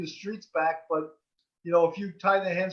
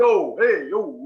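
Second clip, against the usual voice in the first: very loud New York street voice; 8 dB louder than usual. After being told they have a New York street voice, the speaker plays it up. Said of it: "We got like the New York street voice".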